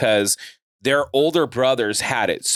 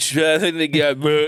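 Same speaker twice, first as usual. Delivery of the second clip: mock drunken, slurred mumbling, higher pitch; 4 semitones higher than usual. Retelling walking up to two strangers while blackout drunk: imitating own drunk mumbling. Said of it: "I probably sounded like".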